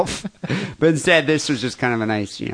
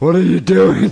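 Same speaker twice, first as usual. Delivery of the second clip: husky mom voice, high and loud, calling out; 5 semitones higher, 7 dB louder than usual. Imitating his mom picking up the phone during his call, in a husky mom voice. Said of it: "my mom has such a husky voice".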